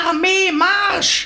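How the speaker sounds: very high, sharp, shrill screamed shout. A major general addresses his army of gherkins, shouting. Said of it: "Generalmajor von Knacki schrie".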